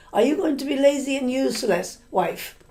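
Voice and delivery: sharp, scolding, angry snap. Retelling a husband snapping at his new wife: imitating an angry snap. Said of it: "He snapped at the new wife".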